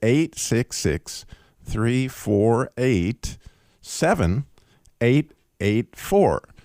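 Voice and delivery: very slow, deliberate, each digit spaced apart. Giving listeners the call-in number, saying it very slowly. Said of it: "we'll say it slow so that you can get it".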